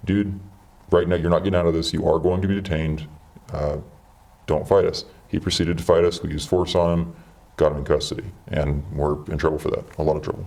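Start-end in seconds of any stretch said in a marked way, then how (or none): 0.0-5.0 steady, soothing, very calm, de-escalating voice. The speaker retells what he told a man resisting them, calm de-escalating voice. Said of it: "in a very calm, de-escalating voice".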